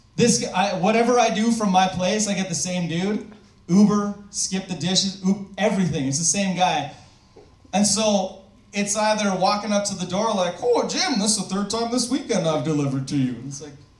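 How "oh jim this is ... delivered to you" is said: plain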